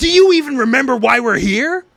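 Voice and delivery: mock-earnest urgent shout. Speaker recapping an anime scene, quoting one character yelling at another: retelling a serious, urgent yell. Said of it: "In like a very like serious, urgent tone".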